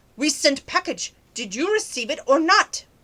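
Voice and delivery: play-acted, irate, angry, demanding, pressing tone. Retelling a scam phone call, imitating an irate caller. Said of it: "he's getting very irate".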